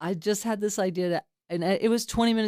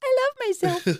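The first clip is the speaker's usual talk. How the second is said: put-on very high, babyish little voice; 4 dB louder than usual. Retelling how a room was told to point at their chests: imitating a baby voice. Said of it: "in this baby voice".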